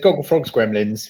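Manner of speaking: ordinary talk, nothing marked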